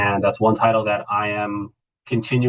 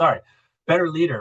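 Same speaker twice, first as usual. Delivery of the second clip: choked-up, catching, high voice; 7 semitones higher than usual. Speaker giving a talk to listeners about leadership, choked up. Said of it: "I'm getting choked up over here".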